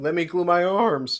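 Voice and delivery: high, loud cracking, breaking voice. Answering a question about the rest of the week, speaker talks with voice cracking. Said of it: "voice crack because I'm twelve".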